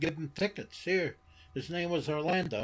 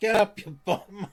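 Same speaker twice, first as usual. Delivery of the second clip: put-on loud raised shout in a kid's voice; 3 semitones higher, 6 dB louder than usual. Retelling yelling at a wrestler from the front row: imitating his own childhood yell. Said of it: "I'm yelling at him".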